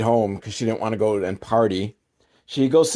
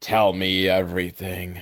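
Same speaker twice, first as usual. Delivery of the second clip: put-on creepy tone, slower; 4 semitones lower, 4 dB quieter than usual. Retelling what a doctor said to a girl, mimicking a creepy delivery. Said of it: "he says it like that, like very creepily".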